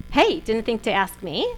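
playful, joking, teasing tone, all in jest. Retelling approaching people who needed a sponsor, retelling a joking remark. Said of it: "in a very joking manner".

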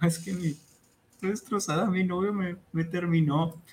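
mock weepy, high, tearful sobbing girl's voice. Retelling a meme of a girl whose boyfriend dumped her: imitating a girl crying. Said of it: "Que está llorando".

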